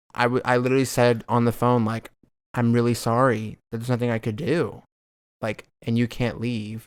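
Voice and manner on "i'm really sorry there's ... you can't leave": ordinary delivery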